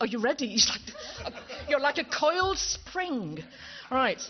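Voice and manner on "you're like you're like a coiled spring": slow, high, spoken while laughing. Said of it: "I'm laughing now".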